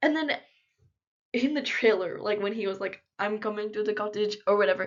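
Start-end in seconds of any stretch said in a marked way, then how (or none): 3.2-4.9 bad, terrible put-on Russian accent. Quoting a man's line from a show trailer, in a terrible russian accent. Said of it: "please ignore my like my terrible Russian accent".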